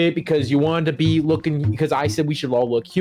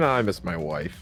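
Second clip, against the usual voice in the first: very low, hushed tone of dawning realization; 10 semitones lower, 6 dB quieter than usual. Playing a character thinking it over: sudden realization. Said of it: "just the realization".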